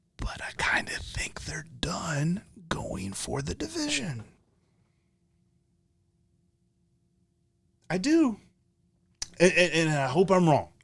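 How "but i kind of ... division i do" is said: hushed whisper, higher and quieter. Sharing a thought not confident about and not wanting to say: whispering. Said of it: "I'm gonna whisper this because I'm not confident about it".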